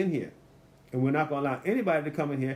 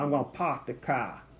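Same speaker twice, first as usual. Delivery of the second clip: put-on Boston accent. Speaker mimics how someone from Boston talks: imitating a Boston accent. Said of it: "somebody in Boston, they go".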